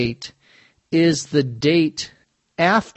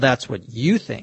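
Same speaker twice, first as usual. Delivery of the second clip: heavy emphasis hitting the word "you" hard; 3 semitones lower than usual. Example of disagreeing with someone, with stress on the word you. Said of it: "Notice that there's an emphasis on the word you".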